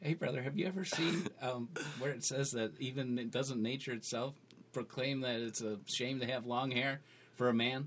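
quiet, concerned, sheepish delivery. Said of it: "Very sheepishly".

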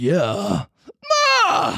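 big, dramatic, swooping talent-show announcer voice. Imagining the announcer starting a row: imitating the X Factor guy. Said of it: "the X Factor guy sort of had an argument".

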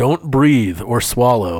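mock, put-on robotic voice. Retelling what the scanner's voice said during a ct scan: imitating a robot voice. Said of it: "there's, like, a robot voice, and it goes".

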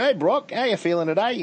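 put-on New Zealand accent in puppet voice. The speaker shows how their glowworm finger puppet greets their son, in a New Zealand accent. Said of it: "doing a New Zealand accent for my son".

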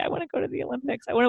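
put-on sheepish tone. Retelling own answer to the coach about diving goals: imitating a sheepish reply. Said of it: "I told him very sheepishly".

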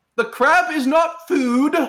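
very high, hollering, protesting yell. Leaning against prison bars as Runt, yelling at another prisoner: yelling in character. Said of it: "lean against the bars and just yell".

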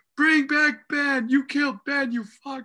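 put-on, very high, stretched-out screaming. Retelling girls shouting at the screen during a movie, imitating girls screaming. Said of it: "They're screaming".

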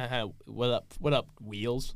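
play-acted, very slow, drawn-out teasing tone. Retelling a friend's teasing after the wheelchair, imitating Chuck mocking. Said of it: "And Chuck would always be like".

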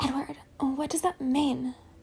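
gentle, quiet, hushed voice. A narrator reads Esme asking Edward a question, softly. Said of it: "Esme asked softly".

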